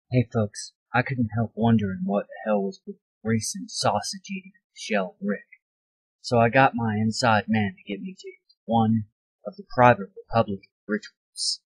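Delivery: secretive, hushed half-whisper. Telling the viewers about getting into a private ritual: half-whispering. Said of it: "who are you whispering to?".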